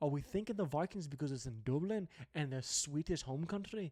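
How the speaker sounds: badly done put-on Irish brogue drifting into Scottish. Previewing a vikings game in dublin, trying an irish accent: bad attempted irish accent. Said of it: "That's a little more Scottish right there".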